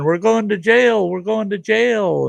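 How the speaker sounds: put-on very high, rough shrieking of children. Retelling kids on a tractor as cops arrive: imitating kids screaming. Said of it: "they're all screaming".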